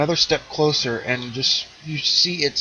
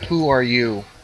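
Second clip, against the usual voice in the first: put-on aged, ancient, old-sounding voice. Voicing an armored guard questioning a player: aged voice. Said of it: "An aged voice comes from within".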